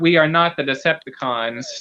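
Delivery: ordinary talk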